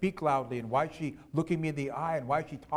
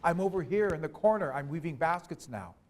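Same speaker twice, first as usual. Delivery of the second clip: ordinary delivery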